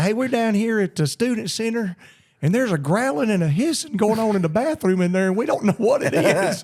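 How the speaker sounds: woman's voice, pitched high. Retelling a prank call about a growling bathroom: imitating a woman's voice. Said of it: "it sounded like a woman said".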